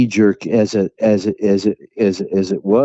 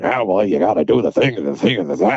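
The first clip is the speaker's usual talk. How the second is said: fatherly, scolding, grumbling rant. Recalling how Bert sounded when he got loud: imitating Bert's grumbling voice. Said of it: "that grumbling voice".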